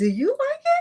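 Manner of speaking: very high, put-on, fake questioning intonation. Imitating her questioning you: imitating someone asking while smiling. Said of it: "she gonna say it with a smile".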